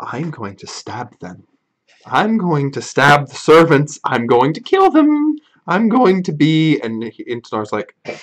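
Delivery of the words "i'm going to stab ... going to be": lively woman's voice, pitch swinging widely up and down. Narrator describes a voice behind a door, voicing Alice in a woman's voice. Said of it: "You hear a woman's voice".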